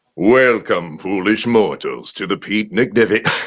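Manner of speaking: deep, ghostly announcer voice. Asked to open a show in the Ghost Host voice. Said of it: "Could you do the ghost host voice".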